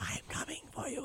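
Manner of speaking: soft, breathy, barely voiced whisper. Joking about chatting up women, whispering a line: mock whisper. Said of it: "I just whisper to him".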